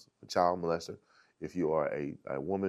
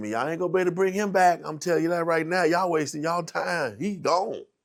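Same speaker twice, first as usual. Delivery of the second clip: mock talking through laughter, very high and loud; 11 semitones higher, 7 dB louder than usual. Retelling what a laughing man in a holding cage said, imitating laughing while talking. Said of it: "and was laughing".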